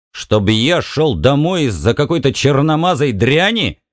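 ordinary delivery

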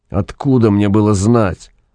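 ordinary delivery, nothing marked

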